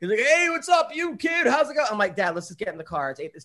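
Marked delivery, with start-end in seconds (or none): 0.2-1.9 put-on, very high, tipsy drunken chatter. Retelling a sedated dad holding court at the hospital: imitating a drunk dad. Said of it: "He's drunk".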